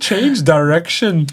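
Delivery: put-on loud, high, botched Liverpool accent. Retelling how a son says a football phrase: imitating Frank's Liverpool accent. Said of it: "I've butchered that".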